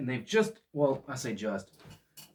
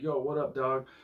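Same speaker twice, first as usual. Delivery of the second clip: soft, laid-back put-on gangster voice; 6 dB quieter than usual. Voicing a toy figure posed like a gangster, gangster voice. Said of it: "It looks like he's doing like a gangster".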